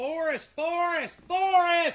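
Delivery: high-pitched yell at full shout. Calling the name forrest over and over, yelling. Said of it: "Am I yelling at you".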